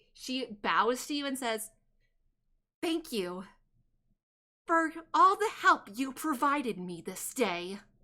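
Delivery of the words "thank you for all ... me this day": words squeezed out through gritted teeth and clenched jaw. A storyteller voices a woman who bows to the players, speaking through gritted teeth. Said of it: "with gritted teeth".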